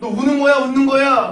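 loud, high, stern mock bark, accusing in tone.

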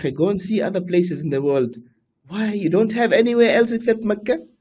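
mocking, sarcastic tone.

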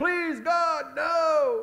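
acted very high, weeping, desperate begging voice. Acting out a man running through the woods, imitating his begging to God. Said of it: "he's begging".

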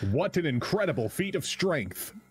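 hype announcer call. Reacting to another player during a game, the speaker uses a Capcom announcer voice. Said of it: "You sound like a Capcom announcer".

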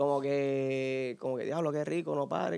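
soft, murmured, low-volume voice.

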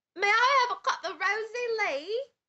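put-on Cockney accent, pitched high. Reading a phrase aloud on a stream as asked, cockney accent. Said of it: "read this in your Cockney accent".

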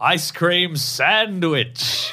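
high, glad, joyful, approving voice. Retelling Apollo Creed calling out behind the speaker: retelling Apollo Creed's joyful bellow. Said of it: "He bellowed".

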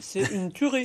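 muffled words spoken through a mouthful of food. Tasting a product when asked for a reaction, talking with mouth full. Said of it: "J'y vais la bouche pleine".

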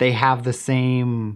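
slow, loud, over-clear explaining voice. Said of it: "I'm getting a little too loud".

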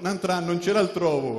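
normal talking voice

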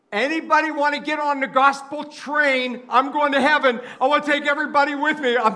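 very high, loud hollering yell. Speaker retells a lady in a nursing home calling out to people, retelling a yell. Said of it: "she's yelling at people".

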